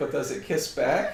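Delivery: ordinary delivery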